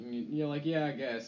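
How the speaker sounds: ordinary talk, nothing marked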